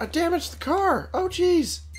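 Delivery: panicked dismay.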